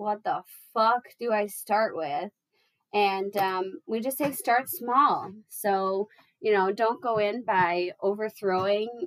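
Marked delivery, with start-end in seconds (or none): none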